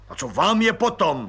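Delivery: sharp, snapped, barked delivery. Narrator reads the colonel's retort to a visitor, barked. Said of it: "Vyštěkl plukovník".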